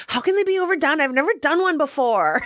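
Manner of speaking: put-on, very high, whiny little voice. Recounting a man's reply to commenters about haunted houses, in Sean's whiny little voice. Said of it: "in kind of his whiny little voice".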